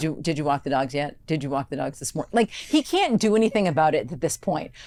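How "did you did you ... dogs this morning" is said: curt, sharp, stern no-nonsense delivery. Acting out asking a partner about the dogs: imitating a sharp, stern tone. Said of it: "I'm afraid of you with that tone".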